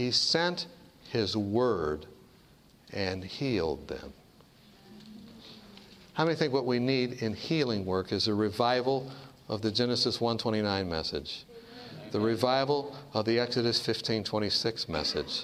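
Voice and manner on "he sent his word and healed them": slower reading with long pauses. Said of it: "I will go slower for you".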